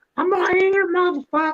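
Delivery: very high-pitched squeaky voice. Retelling how Walt answered when the speaker came looking for him: imitating Walt's squeaky voice. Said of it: "he talks with a squeaky voice".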